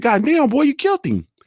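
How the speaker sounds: very high-pitched exclamation, shooting way up.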